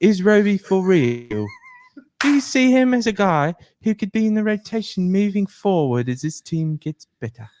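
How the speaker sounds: put-on British accent. Reading out a question in a uk accent. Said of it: "read this one, but in, in a U K accent".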